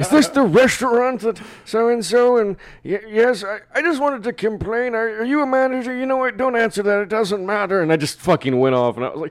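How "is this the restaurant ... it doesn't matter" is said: put-on old man voice, much higher, louder, slower. Prank-calling the store to complain about the cashier, imitating an old man voice. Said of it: "I used this best old man voice".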